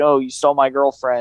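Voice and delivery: ordinary talk, nothing marked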